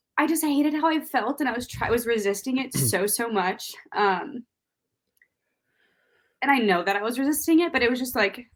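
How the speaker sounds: tearful, crying speech, talking through tears. Recounting daily morning phone calls to listeners, crying while talking. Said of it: "can you guys understand me still?".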